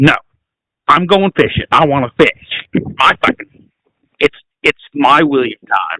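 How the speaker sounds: put-on angry, stubborn, insistent tone. Retelling a friend's reaction to missing fishing: imitating Kylie being mad. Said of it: "she's just mad".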